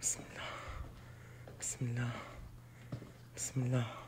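soft, very quiet whisper, man's voice. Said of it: "he's whispering".

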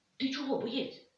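scared, startled voice. A minibus driver backs away from a soldier and asks him, frightened. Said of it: "злякано відступив на кілька кроків водій".

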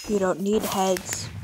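creepy, eerie tone of voice. Telling another player they don't need heads, in a creepy way. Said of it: "Don't say it in that creepy way".

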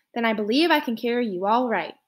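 ordinary delivery

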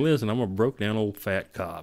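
normal talking voice

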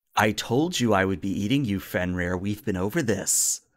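put-on possessed voice. Narrating a scene where Rast speaks to Fenrir: Rast's possessed, different voice. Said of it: "you hear a completely different voice than his normal".

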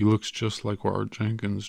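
ordinary delivery

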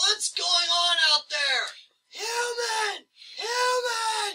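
very high, shrill holler. Narrator voices the other ones yelling down the hall. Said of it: "kind of yell down the hall".

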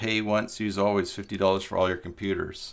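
normal talking voice

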